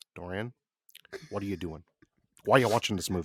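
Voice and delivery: put-on low-pitched, old-school New York accent. Imagining Martin Scorsese walking in during a movie, Martin Scorsese impression. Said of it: "I'm talking like Martin Scorsese talks like this".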